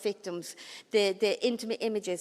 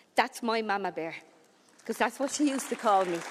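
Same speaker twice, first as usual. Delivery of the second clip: ordinary talk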